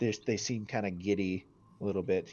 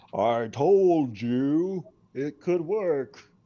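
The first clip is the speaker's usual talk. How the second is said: huge, very loud, pitched-up booming voice; 7 semitones higher, 10 dB louder than usual. Narrating a game, the speaker voices Maul as he floats off the ground: booming voice. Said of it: "said the booming voice of Maul".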